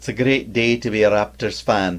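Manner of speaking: half-hearted, weak put-on Scottish accent. A podcast host gives the show's final word in a weak Scottish accent. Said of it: "That was my weak Scottish accent".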